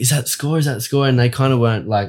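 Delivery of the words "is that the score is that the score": high-pitched, repeated yelling. Retelling shouting a question to mates on the beach: imitating own yelling. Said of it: "I was yelling".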